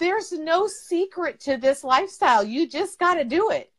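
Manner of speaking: on the verge of tears. Speaker addresses 'you guys', teary-eyed. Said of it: "I'm getting all teary eyed".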